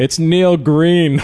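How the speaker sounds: put-on very high yell, as if from far back. Retelling an audience member in the back row calling out, retelling a yell. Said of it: "Just yells out".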